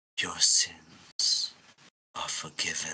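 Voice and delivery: slow, drawn-out, deliberate stage half-whisper. Voicing a figure who taps a kneeling character with a blade: half-whispering. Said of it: "He whispers".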